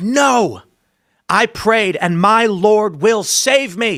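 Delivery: acted-out, high, defiant, stubborn call upward. Telling a story, speaker voices the man answering the helicopter crew: retelling a yelled reply. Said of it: "And he yells back".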